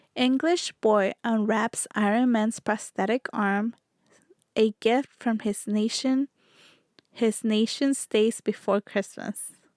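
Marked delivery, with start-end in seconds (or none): none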